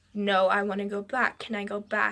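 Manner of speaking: normal talking voice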